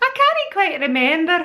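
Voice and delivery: put-on Scottish accent. Speaker quotes a Scottish friend's phrase, imitating the Scottish friend's accent. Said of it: "I've got a Scottish friend".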